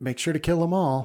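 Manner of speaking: cheerful, high, quick, happy-sounding voice. Describing a character's voice and quoting its line in a put-on cheerful, happy voice. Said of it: "in the most cheerful, you know, happy voice".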